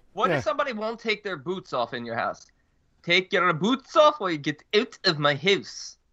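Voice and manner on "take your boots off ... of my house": put-on Eastern European accent. Asked about guests who keep their boots on, answering in a put-on eastern european accent. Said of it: "What accent was that?".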